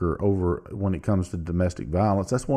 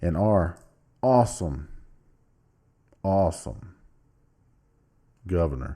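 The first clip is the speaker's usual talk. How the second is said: sarcastic, mock-glowing tone meaning the opposite; 2 semitones lower than usual. Commenting on the state flag vote, praising the governor: sarcastic. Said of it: "I'm being sarcastic".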